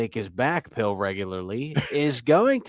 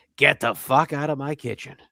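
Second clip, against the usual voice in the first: mock toned-down, mild furious yell; 3 semitones higher than usual. Retelling how an owner threw someone out of his kitchen: imitating someone yelling and screaming. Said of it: "yelling and screaming at [name]".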